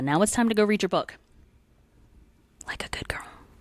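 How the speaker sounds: whispered. Closing the episode, telling listeners to go read their book: whisper. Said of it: "It's just the whisper".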